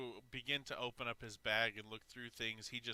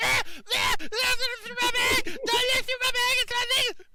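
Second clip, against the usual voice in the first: very high, shrill, very loud protesting yell; 15 dB louder than usual. Voicing a gagged captive who spits out the gag, yelling in protest. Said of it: "spits it back out and goes".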